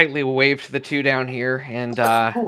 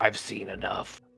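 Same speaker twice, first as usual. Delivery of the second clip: unusually deep, very quiet, hushed voice; 5 semitones lower, 11 dB quieter than usual. Narrating a game, voicing Remulus as he slides the potion back, unusually deep voice. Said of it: "in a voice that is uncharacteristically deep".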